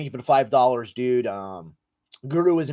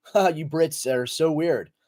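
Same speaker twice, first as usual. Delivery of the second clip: ordinary delivery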